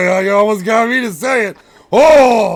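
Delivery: loud, high-pitched, startled outburst.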